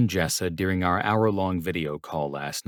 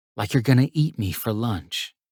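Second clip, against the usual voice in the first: softly whispered, higher; 3 semitones higher than usual. Reading a scene aloud, a character teases her boss: whispering. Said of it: "she whispered".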